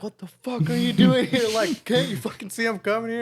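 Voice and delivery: mock furious, very high, loud yell. Act out how you went off at scooter kids at Issaquah, retelling own yelling and swearing. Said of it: "I'm just yelling and swearing".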